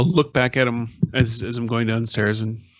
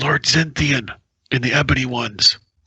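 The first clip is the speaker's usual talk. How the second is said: hushed whisper; 2 semitones higher than usual. A storyteller voices a character naming lord zenthian, in a whisper. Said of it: "I'll kind of do a whisper".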